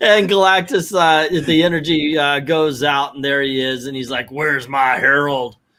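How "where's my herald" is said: put-on spoken in a country accent. Retelling a story where Galactus appears and asks for his herald: Galactus with a country accent. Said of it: "he starts talking with an, uh, a country accent".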